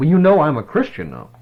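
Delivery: insistent, pushed-up loud voice. Retelling a man's second remark after getting no reply: retelling a voice getting louder. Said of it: "voice getting a little louder".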